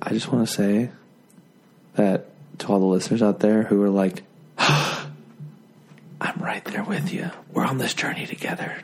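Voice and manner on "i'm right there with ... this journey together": soft whisper. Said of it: "When I'm whispering, I'm talking to you specifically".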